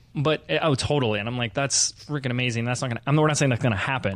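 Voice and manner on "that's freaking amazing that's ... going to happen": ordinary delivery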